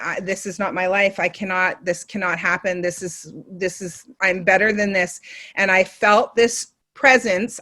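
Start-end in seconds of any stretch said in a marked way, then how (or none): 0.0-5.2 reenacted tearful crying voice, quieter. Retelling being on knees alone in a hotel room: reenacting own crying. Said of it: "I literally was on my knees crying, going".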